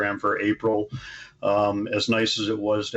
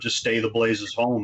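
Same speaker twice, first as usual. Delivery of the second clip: usual speaking voice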